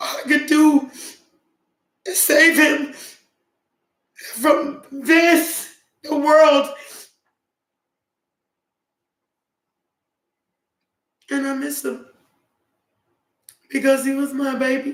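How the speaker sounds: tearful, crying while talking. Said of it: "I'll stop crying".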